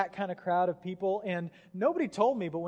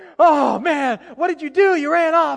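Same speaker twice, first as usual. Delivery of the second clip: mock very loud, high, fed-up, frustrated voice; 7 semitones higher, 14 dB louder than usual. Describing parents collecting lost kids, a dad scolds his son: imitating a mad, frustrated dad. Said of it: "And he's all mad, and he's frustrated".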